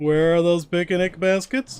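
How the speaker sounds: high, loud cartoon bear voice. Showing a dinosaur in a game, talking like Yogi Bear. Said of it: "I'm talking like Yogi Bear".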